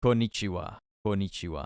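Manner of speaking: deep, epic, dramatic anime voice. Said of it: "you know those epic anime voices that are, like, really deep?".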